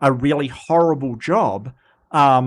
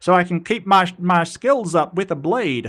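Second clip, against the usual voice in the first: put-on Southern accent; 3 semitones higher than usual. Retelling a man's reply in a story, in an accidental Southern accent. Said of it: "That was Southern".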